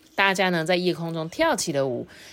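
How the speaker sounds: plain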